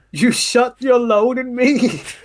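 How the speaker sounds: slow, high, drawn-out blubbering sob. Retelling a film scene where Stu cries: imitating Stu crying. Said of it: "all crying and shit".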